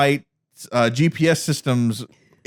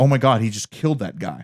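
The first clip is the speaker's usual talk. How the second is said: weepy, tearful crying outburst; 2 semitones lower than usual. Retelling a scene where a character cries: imitating a character crying. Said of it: "Metamorpho's crying like".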